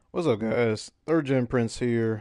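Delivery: voice cracking. Greeting viewers at the start of a stream after work, voice cracking. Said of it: "Voice crack".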